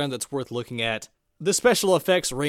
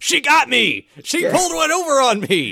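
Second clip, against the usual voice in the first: put-on fuming angry voice, higher and louder; 10 semitones higher, 7 dB louder than usual. Retelling how Tucker complains to everyone after being tricked: imitating Tucker furious. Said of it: "Tucker is furious".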